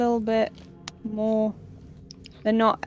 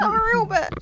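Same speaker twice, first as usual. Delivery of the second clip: high, loud, mad, hotly insistent protest. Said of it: "That's how mad I was".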